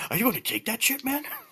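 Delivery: very high, otherworldly ethereal half-whisper. Voicing a voice that half-whispers in the barbarian's ear: ethereal half-whispering voice. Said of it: "an ethereal voice whispers in Zartel's ear".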